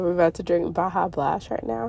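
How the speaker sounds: ordinary delivery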